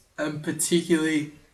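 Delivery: talking through a yawn. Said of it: "sorry, I'm yawning".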